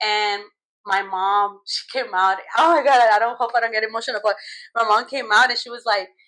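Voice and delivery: ordinary talk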